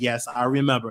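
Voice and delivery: acted-out quiet embarrassed voice. Retelling the grandmother's embarrassed reply in church: imitating a low embarrassed voice. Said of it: "my grandmother said in a low voice".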